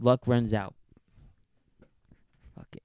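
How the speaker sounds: swooping, brash wrestling-promo style trash talk. Calling out unnamed rivals: wrestling promo delivery. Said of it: "it sounded like a wrestling promo".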